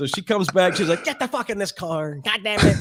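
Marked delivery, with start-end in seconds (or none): 1.0-2.8 put-on angry Mexican accent. Retelling how your mad mother came back and ordered you into the car, imitating her angry mexican accent. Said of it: "her Mexican accent flew out".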